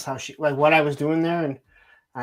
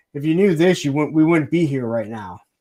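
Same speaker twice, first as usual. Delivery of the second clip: mock deadpan, very dry, louder; 5 dB louder than usual. Retelling a joke someone made during an ultrasound: imitating a very dry delivery. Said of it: "he says it very dry".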